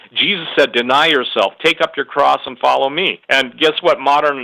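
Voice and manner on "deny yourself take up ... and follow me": ordinary talk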